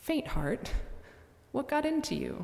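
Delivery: playful, gently teasing, sing-song lilt. Rewording a rebuke to a doubter, voicing it in a gently teasing tone. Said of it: "speaking with a smile on his face and a gently teasing tone".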